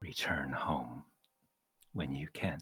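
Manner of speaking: very distant voice, as if from far away. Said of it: "she says in this very distant voice".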